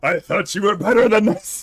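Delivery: belted out high and loud, sounding disappointed. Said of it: "the Archpriest is like".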